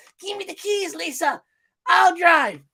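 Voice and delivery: very high, comic movie-character voice. Quoting a favorite funny movie scene: impression of a movie character. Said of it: "I don't know if I'm sounding just like him".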